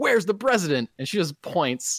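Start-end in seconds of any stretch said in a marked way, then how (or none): 0.0-0.9 raised, high-pitched yelling. Recapping a TV scene where a character demands the president; retelling a yell at a nurse. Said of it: "just yells at a nurse".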